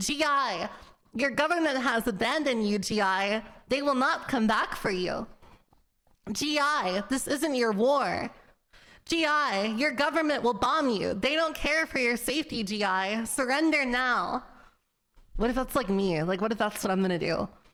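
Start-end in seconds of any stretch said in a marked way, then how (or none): 0.0-14.4 steady, slow, wartime propaganda-style broadcast announcer voice. Retelling a wartime loudspeaker broadcast to soldiers: imitating a propaganda loudspeaker voice. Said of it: "go on a loudspeaker and say things like".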